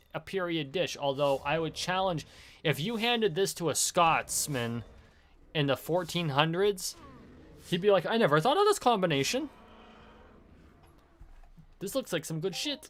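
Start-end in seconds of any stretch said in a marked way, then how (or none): 8.0-12.9 put-on quick, pitched-up Irish accent. Imagining a fourteen-hundreds Scotsman handed the rations, in a failed Scottish accent that sounds Irish. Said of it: "I just did Irish".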